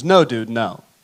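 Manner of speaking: very serious, put-on voice. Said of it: "And in a very serious voice".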